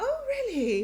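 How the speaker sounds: sweetly polite feigned interest, smiling, pitched high.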